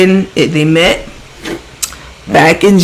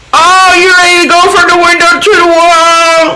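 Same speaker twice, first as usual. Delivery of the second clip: high, loud, mocking slang voice. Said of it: "this is how she talks".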